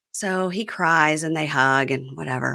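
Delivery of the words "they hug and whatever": ordinary talk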